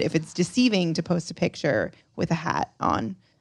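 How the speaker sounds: normal talking voice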